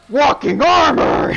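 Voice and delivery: very high, shrill, very loud monster giant shout. Voicing a giant who turns on a player: giant shouting. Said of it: "he turns around and goes".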